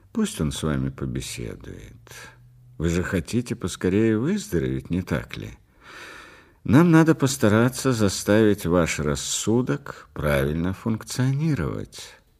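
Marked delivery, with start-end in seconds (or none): none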